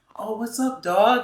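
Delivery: phony friendly voice, very high and very slow. Imitating someone who fakes being genuine: imitating a fake, put-on greeting. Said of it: "You can feel when someone's faking it".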